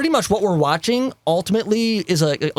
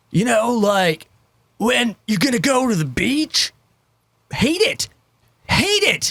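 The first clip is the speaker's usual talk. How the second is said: surfer-dude voice; 5 semitones higher than usual. Ranting about people who portray it, doing a stereotypical surfer voice. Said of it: "does that stupid ass stereotypical surfer voice".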